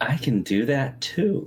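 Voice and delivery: sugary, very sweet, high little voice. Game master voicing a character's reply in a tabletop game, very sweet voice. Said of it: "in a very sweet voice says".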